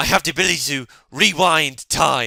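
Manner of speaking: very loud, slow, put-on raspy voice. Describing a YouTuber's let's-play video, the speaker does his very raspy voice. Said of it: "proper raspy voice".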